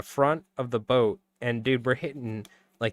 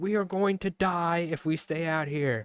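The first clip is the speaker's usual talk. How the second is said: imitated yelling, pitched higher; 6 semitones higher than usual. Retelling yelling at the crew during a fishing trip: imitating own yelling. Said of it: "I'm yelling at these guys".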